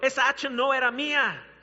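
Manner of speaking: loud, high cry of dismay.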